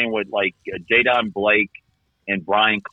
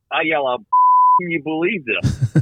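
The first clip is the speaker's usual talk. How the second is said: mock yell, much higher and slower; 7 semitones higher than usual. Retelling finding your ball buried by a bunker: retelling own yell. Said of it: "I yell out".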